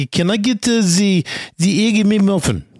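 put-on Russian accent. Retelling a local ordering food at McDonald's: Russian accent. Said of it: "ordering all this food in this Russian accent".

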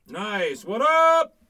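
shrill, very loud, very high yell. Greeting the others: yelling. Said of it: "you don't gotta yell at everybody".

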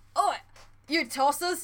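mock bad British accent. Mocking an actor's accent in the Oceans movies, in a bad British accent. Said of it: "it's just such a bad accent".

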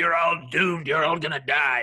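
put-on crazy old crone voice. Pitching a story scene, voicing a crazy old hag warning lawmen: old hag voice. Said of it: "when you were doing the voice of the hag".

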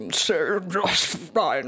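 slow, croaking voice like a frog.

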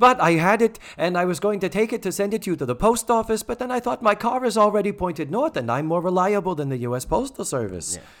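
put-on thick European grandmother accent.

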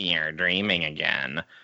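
very low, deep, weird little goblin voice. Retelling a scene where Sally answers a character, in Sally's weird little goblin voice. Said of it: "in this weird little goblin voice says".

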